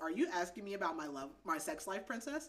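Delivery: ordinary talk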